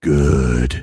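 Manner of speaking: low, booming delivery of a single word. Joking about witnesses speaking in a low register: Jocko impression. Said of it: "or the Jocko".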